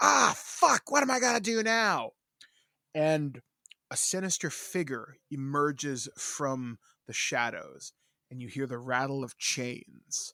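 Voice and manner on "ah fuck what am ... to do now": loud, rough voice, pitched higher. Pitching a horror film plot, acting out Chucky's reply: Chucky voice. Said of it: "and Chucky's like".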